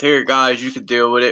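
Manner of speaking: mocking, sarcastic put-on voice. Acting out what God says when throwing garbage down: sarcastic quote of God. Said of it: "I'm being sarcastic".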